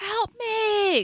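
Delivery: very high, frightened, terrified scream. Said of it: "and you're trying to scream".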